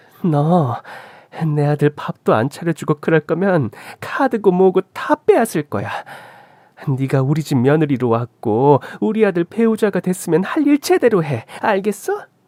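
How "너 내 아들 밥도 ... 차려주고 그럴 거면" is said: usual speaking voice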